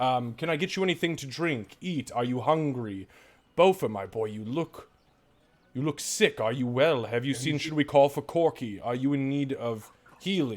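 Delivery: charming, gracious host-like manner. Game narrator voices a mayor inviting visitors in and fussing over them, charismatic Mayor Vunor. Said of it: "standing there in all of his charismatic nature".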